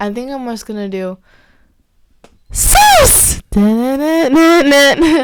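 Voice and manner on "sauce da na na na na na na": very loud, rising, full-on scream. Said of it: "it was screaming".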